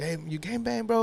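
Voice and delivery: put-on enthusiastic, friendly tone. Acting out the stranger's greeting from another speaker's story: imitating an enthusiastic greeting. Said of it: "he said it with such enthusiasm".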